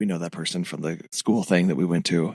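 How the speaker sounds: put-on whisper. Retelling what Megan whispers at public events: imitating Megan whispering. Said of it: "she will turn and whisper".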